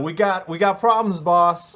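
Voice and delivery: high-pitched yell. Playing a character during a roleplaying game, call out to the boss, yelling. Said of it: "I was gonna yell".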